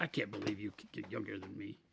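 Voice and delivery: very quiet, low, hushed grumbling under the breath. Teasing another speaker by imitating his complaint: imitating someone grumbling. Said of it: "He's like".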